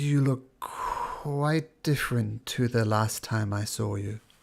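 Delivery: voice sounding disembodied. Voicing a voice heard in a player's head during a fight: disembodied voice in your head. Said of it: "And he says".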